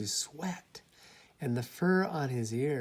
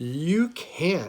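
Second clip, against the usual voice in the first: loud, sharp, snapped voice; 3 semitones higher, 6 dB louder than usual. Reading a story aloud, voicing the rabbit's reply to the bear, snapping. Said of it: "snapped the rabbit".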